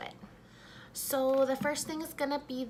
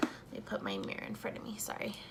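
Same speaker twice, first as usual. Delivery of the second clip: soft, unvoiced whisper. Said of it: "If you feel like I'm whispering".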